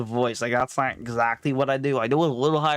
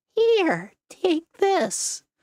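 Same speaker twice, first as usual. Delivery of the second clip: very high, swooping, tiny squeaky voice; 3 dB louder than usual. Imitating a character handing something to safe contestants, squeaky character voice. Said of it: "Like that's his voice, by the way. He's like very squeak".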